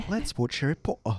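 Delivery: put-on British accent. Joking with two friends in a put-on british accent. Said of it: "his British accent".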